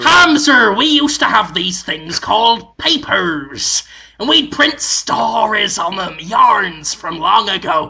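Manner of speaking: storybook pirate voice. Telling another speaker about printed stories of long ago: pirate Willem Dafoe voice. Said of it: "It was Pirate William Dafoe".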